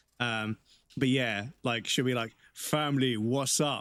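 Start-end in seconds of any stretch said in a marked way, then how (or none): 2.6-3.9 put-on South London man's accent, male voice. Retelling how she speaks before switching to her girl voice, in a South London male voice. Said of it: "she speaks in like a South London male vo- voice".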